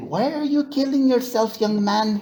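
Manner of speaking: bad put-on Filipina accent. Quoting nurses who came to him at night, speaker uses a bad Filipina accent. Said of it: "that's a bad uh, Filipina nurse impersonation".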